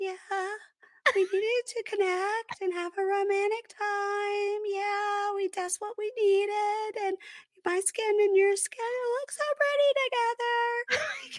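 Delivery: very high, breathy, weak voice. Retelling a couple talking in bed, the woman speaks in a breathy Minnie Mouse voice. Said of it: "she is speaking in a weird, breathy, Minnie Mouse, weak sounding voice".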